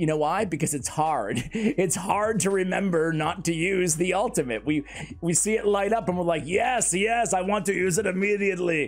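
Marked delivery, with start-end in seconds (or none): 6.4-8.9 strained, constipated-sounding movie-star impression, higher pitch. Acting out our reaction when the ultimate lights up, in a constipated Arnold Schwarzenegger voice. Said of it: "was that like an Arnold voice? Was that kind of a constipated Arnold Schwarzenegger?".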